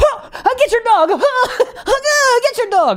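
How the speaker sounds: mock frightened scream. Retelling a delivery driver chased by a dog: imitating a scared scream. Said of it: "he was screaming like a straight up woman".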